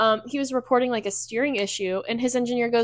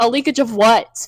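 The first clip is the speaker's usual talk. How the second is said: mock annoyed driver voice, louder; 8 dB louder than usual. Retelling a driver's radio reply, imitating an annoyed driver. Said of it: "he was so pissed off".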